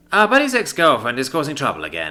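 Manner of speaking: plain reading voice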